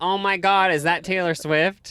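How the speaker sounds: put-on, mock-sarcastic tone. Telling someone how their remark sounded to you, repeat it by imitating a sarcastic remark. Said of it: "it sounded like in a sarcastic way".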